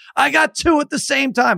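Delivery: very high, ragged, rough screaming. Retelling a two-hand touch argument on the beach: imitating someone screaming. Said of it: "now he's screaming at me on the beach".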